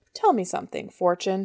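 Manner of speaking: ordinary delivery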